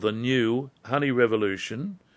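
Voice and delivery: said slowly and deliberately.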